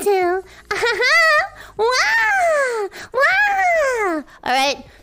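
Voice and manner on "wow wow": much higher pitched put-on squeal. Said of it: "That's my real voice".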